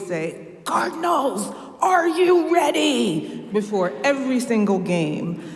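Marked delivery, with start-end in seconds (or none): 0.7-3.5 very raspy cheering voice. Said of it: "in a very raspy voice".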